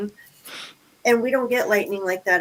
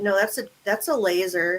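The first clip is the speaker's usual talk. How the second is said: plain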